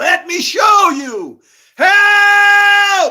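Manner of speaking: very high, very loud, slow, drawn-out shrill scream. Retelling own past words about the prophecies: retelling own screaming. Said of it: "that's what I'm screaming over here going".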